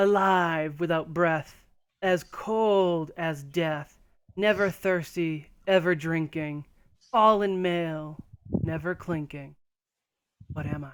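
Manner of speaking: resonant, sonorous, cold, drawn-out serpent voice. Game narrator voicing a serpent posing its riddle, more sonorous serpent voice. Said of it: "in like a more sonorous voice".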